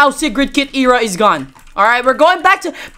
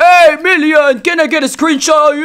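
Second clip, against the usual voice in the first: fake elderly man voice; 2 semitones higher than usual. Boasting that even the president asks for a picture, Joe Biden old-man voice. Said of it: "we're doing this voice because he's old".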